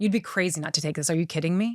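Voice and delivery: put-on disrespectful, dismissive tone. Retelling what a negotiator said about the offer: imitating a disrespectful tone. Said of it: "It was disrespectful".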